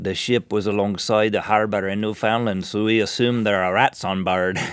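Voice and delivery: put-on Irish accent. Quoting the director of the Irish Coast Guard about the ship, in an Irish accent. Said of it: "(Irish accent)".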